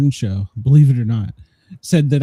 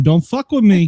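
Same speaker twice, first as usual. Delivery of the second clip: put-on New York accent; 5 semitones higher than usual. Showing how to put on the accent: put-on New York accent. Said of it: "I can put my New York on".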